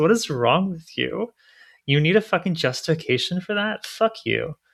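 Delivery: furious, fed-up, high-pitched angry rant. Ranting at people who find it too difficult, getting pretty mad. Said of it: "I'm I'm actually getting like pretty mad".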